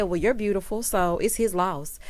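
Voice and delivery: ordinary delivery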